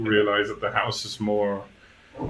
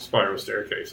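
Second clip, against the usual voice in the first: ordinary talk, nothing marked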